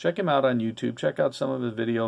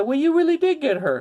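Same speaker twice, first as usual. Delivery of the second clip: raised, high-pitched southern drawl; 5 dB louder than usual. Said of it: "in his southern drawl".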